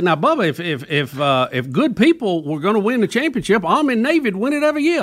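high, halting voice. Retelling what a coach told the host on the show: Bobby Bowden impression. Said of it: "You did it".

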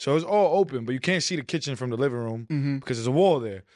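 plain

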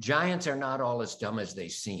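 ordinary talk

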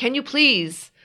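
put-on high, irrational, desperate little-kid voice. Retelling looking at a friend to take it away: imitating her own irrational childlike plea. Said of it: "crazy, irrational, like, kid, like".

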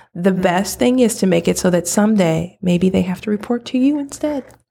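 sweet, silky voice. Asked for advice on petty coworkers, the guest answers sweet as silk. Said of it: "the sweet as silk voice you've got going".

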